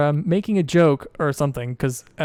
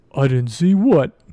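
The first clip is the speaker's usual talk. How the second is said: slow, loud, dopey dwarf voice. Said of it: "And Guck says".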